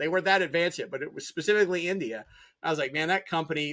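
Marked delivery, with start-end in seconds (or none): none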